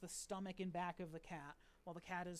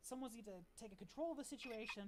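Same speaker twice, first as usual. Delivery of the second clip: plain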